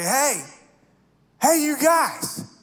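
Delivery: put-on high, slow, drawn-out drunken call. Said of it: "had maybe a little bit too much of Wisconsin's finest".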